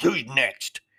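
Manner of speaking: put-on growled, fed-up, frustrated voice. Speaker retells the frustrated man turning around and asking who's next: retelling a growl. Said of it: "He turned around and growled".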